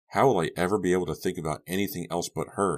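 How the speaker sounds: plain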